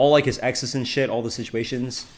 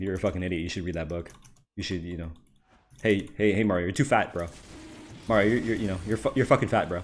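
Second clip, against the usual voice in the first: put-on blunt, jeering, repeated taunting; 3 semitones lower, 4 dB quieter than usual. Retelling morning calls to a friend, mario: imitating taunting insults. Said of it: "I'll just call him an idiot over and over".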